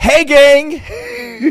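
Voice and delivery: loud, high-pitched shout from a group. Mocking a greeting by saying it like Mister Belding: Mister Belding voice. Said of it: "Hey Gang makes you sound like Mister, uh, Mister Belding".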